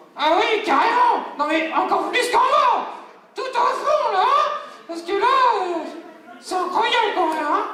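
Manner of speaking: very high, hard-to-handle, unruly puppet voice. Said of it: "[name] la marionnette qui est plutot dur à gérer".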